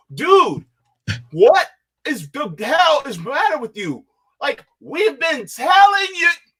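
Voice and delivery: high, loud frustrated outburst. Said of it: "I'm, I'm frustrated".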